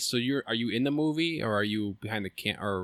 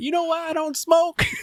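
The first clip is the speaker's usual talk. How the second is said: very high, very loud stand-up comic delivery; 8 dB louder than usual. Retelling a stand-up bit about smoking: Chris Rock voice. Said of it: "I was gonna do a Chris Rock voice".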